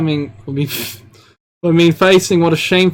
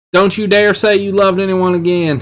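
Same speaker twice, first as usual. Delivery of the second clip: bad, failed put-on country accent; 3 semitones higher than usual. Reading a script line aloud, in a bad country accent. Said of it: "A country accent".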